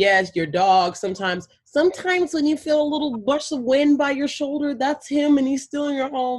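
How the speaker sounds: put-on babyish voice, high and loud. Retelling how a woman spoke to waiting people about their dead pets, in a baby voice. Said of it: "her voice switches to a baby voice".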